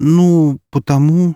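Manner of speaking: embarrassed, stuck for words. Pressed to explain her conclusion, a woman starts to answer, embarrassed. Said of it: "она смутилась".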